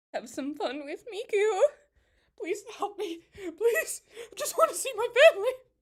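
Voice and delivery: mock scared, very high pitch, rising. Reacting to a commercial, mimicking the man in it: mock-frightened voice. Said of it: "The whole time he sounds so frightened".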